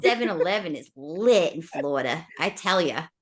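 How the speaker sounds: put-on Southern accent slipping into Boston. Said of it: "That turnbacks into Boston".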